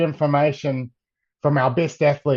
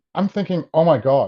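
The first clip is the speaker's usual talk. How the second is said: normal talking voice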